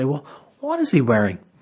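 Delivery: inquisitive, curious, inquiring tone. Showing how to ask a child about an imagined leprechaun, inquiring, inquisitive voice. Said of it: "I do it in an inquiring, inquisitive voice".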